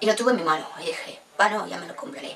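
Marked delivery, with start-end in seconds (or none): none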